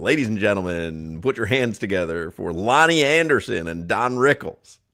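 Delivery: seventies variety show announcer voice. Joking about old-fashioned greetings, imitating a 1970s tv variety show announcer. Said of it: "a nineteen seventy-six variety show on N B C".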